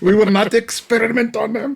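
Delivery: very high-pitched put-on German accent. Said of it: "kind of anti-Nazi German accent".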